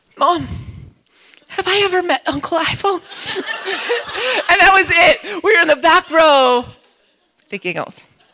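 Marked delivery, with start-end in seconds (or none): 0.2-3.0 acted-out tearful, crying voice. At a funeral, turning to mom in the back row, imitating own crying. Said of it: "through tears".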